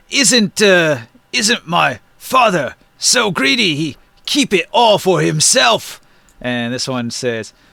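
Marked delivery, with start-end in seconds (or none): 0.1-5.9 giant character voice. Voicing a giant talking with another giant: giant Maluk voice. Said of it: "different voices for each one".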